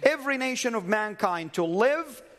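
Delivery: heavy, hard stress on the word "every".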